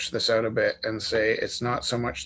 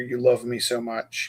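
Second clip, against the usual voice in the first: put-on, mock whispering; 4 dB quieter than usual. Retelling another speaker whispering in their ear while painting: imitating a whisper. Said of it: "whispering in my ear".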